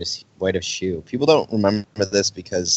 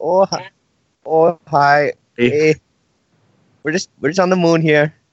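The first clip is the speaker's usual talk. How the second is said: fake Minnesota accent, much higher, louder; 9 semitones higher, 5 dB louder than usual. Speaker riffs about americans, trying an attempted minnesota accent. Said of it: "I don't know how to do Minnesota".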